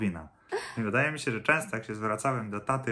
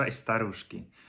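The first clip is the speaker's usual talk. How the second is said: ordinary talk, nothing marked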